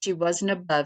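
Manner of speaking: plain reading voice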